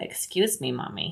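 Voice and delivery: hushed, breathy, whispered dog voice. Voicing the dogs that come in to check: voicing the dogs. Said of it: "They're like".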